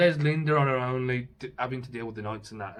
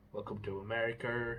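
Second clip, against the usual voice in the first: slipping into a put-on American accent; 11 dB quieter than usual. Describing the twin brother on the show: Michael with American accent. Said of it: "who's got an American accent".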